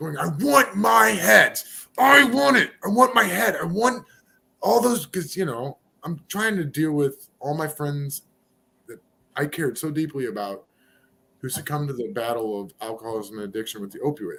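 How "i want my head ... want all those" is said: high, rough, raw, slow, drawn-out scream. Retelling own past words screamed at the stars: imitating own screaming. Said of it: "I'm screaming at the stars".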